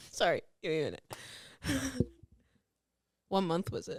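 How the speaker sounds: acted dry, flat, very hushed deadpan delivery. Retelling how he reacted to the speaker's story, imitating his deadpan delivery. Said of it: "he's more deadpan in it".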